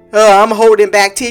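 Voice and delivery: ordinary talk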